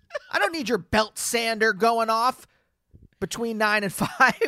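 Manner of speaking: loud, theatrical put-on scolding, projected. Telling off an imagined neighbor with a sander: mock loud telling-off. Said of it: "you're saying it loud enough for them to hear it".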